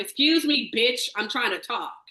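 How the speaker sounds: mock, blunt, no-nonsense assertive tone. Imagining what a named player could have said: imitating Brady speaking up loudly. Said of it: "you have a loud ass voice that where you coulda just been like".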